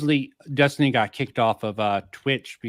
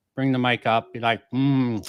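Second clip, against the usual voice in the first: ordinary talk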